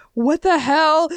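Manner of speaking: acted, very high-pitched, outraged, furious cry. Retelling a manga scene where he is turned away: imitating a mad character. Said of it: "And he's so mad".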